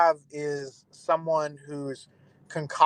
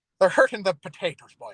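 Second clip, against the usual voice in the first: clumsy, overdone put-on Irish brogue; 4 semitones higher than usual. Joking about St. Patrick ridding Ireland of snakes, speak in a bad Irish accent. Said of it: "found that accent offensive".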